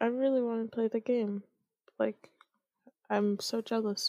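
drowsy, half-asleep sounding. Chatting with someone about their camping game, sounding sleepy. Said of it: "you sound like you need to fall asleep".

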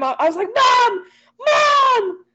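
shrill, very high, drawn-out scream. Retelling the night the closet doors swung open, screaming bloody murder for mom. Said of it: "I screamed bloody murder".

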